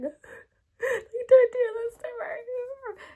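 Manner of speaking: sobbing wail, very high and loud, acted out. Retelling getting a blood test, imitating own tearful crying. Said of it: "I was crying like".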